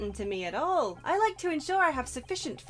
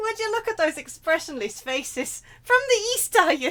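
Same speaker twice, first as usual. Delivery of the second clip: tentative, high-pitched attempt at an Irish accent; 5 semitones higher, 6 dB louder than usual. Reading lines aloud, the speaker tries an attempted Irish accent. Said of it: "I'm sorry, okay? I'm just gonna try".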